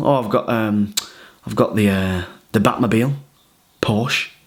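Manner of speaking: casual under-breath mutter. Retelling what Gok Wan answered about his car: imitating a casual under-breath remark. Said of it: "under his breath, just, just casual".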